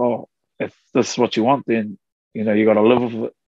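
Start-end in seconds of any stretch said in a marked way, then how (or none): none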